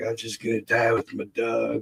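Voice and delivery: faked, dying, deathbed voice. Retelling how the man kept faking dying all night: imitating someone faking dying. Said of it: "the whole night he kept pulling that bullshit".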